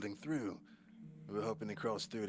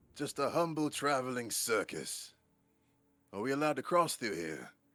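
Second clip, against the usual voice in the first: character bellow, higher pitch and louder; 4 semitones higher, 6 dB louder than usual. Challenged from a distance by someone holding a crossbow, Agnew answers, bellowing at the top of his lungs. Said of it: "bellows at the top of his lungs".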